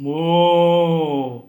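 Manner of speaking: loud cow mooing.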